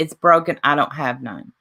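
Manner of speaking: normal talking voice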